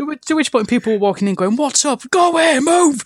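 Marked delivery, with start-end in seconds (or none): 2.1-3.0 put-on full-lung scream, much higher and slower. Recalling yelling at people who walked in during a game fight, retelling a scream. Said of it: "Screaming at the top of my lungs".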